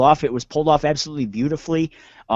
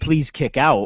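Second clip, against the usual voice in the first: acted, mock-pleading begging voice. Retelling how you reacted when he hit the second spear: retelling own begging. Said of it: "I was begging".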